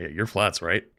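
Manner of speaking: quiet, soft, hushed, low-key delivery. Retelling a fan's question at a grocery store: imitating someone speaking quietly. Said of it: "really quietly, like, leans in".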